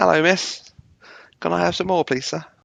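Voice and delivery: put-on British accent. Speaker says they'll do a British accent in the background, doing a British accent. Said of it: "I'll do my British accent".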